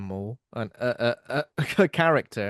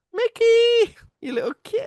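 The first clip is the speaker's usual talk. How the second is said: very high, raised, drawn-out cartoon voice; 7 dB louder than usual. Guessing what Minnie Mouse says: Minnie Mouse voice. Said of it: "what does Minnie Mouse say?".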